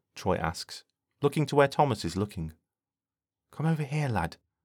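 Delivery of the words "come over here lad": quiet, soft, gently spoken. [name] speaks to Thomas as he spots a predator bird, quietly. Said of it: "[name] says quietly".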